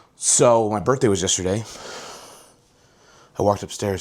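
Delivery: breathless, out of breath. Starting a daily life video after walking upstairs, out of breath. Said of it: "so I'm out of breath".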